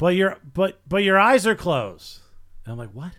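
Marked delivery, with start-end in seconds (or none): 0.0-2.2 put-on woman's yell, higher, louder, slower. Comedian retelling what a woman yelled during his joke, imitating her yell. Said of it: "this woman yells".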